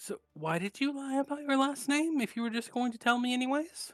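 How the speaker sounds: affable, friendly hushed half-whisper, a touch high. Narrating a character who half-whispers a question to a player, half-whispering. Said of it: "he whispers to you".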